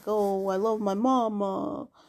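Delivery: slow classic Italian accent. Speaker describes podcast hosts, mimicking a classic Italian stereotype. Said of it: "Like classic Italian".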